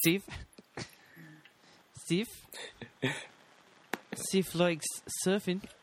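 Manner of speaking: put-on South African accent. Saying a nickname in a put-on south african accent. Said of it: "Don't bring a South African ac-, accent into this".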